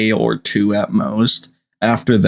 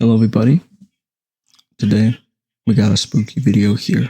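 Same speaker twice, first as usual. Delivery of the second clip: hushed whispered delivery. Greeting everybody at the start of a spooky video, whispering. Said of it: "I'm whispering to set the mood".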